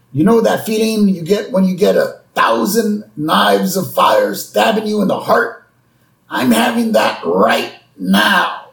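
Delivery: high, pained, groaning, crying voice.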